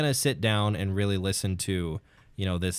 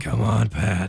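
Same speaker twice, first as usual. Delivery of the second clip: loud voice with heavy, extreme rasp throughout; 6 dB louder than usual. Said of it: "That was my impression of [name]'s speaking voice. He does have an v- extremely raspy speaking voice".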